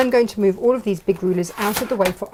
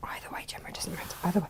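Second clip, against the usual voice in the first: soft, very hushed whisper, barely any voice; 3 semitones lower, 15 dB quieter than usual. Demonstrating a cutting mat to Gemma, whispering. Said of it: "I don't know why I'm whispering".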